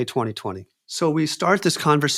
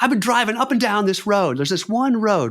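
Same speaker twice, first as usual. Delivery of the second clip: high-pitched, furious, very angry voice; 6 semitones higher than usual. Retelling a late phone call from a caller: imitating someone furious. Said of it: "he's super pissed off".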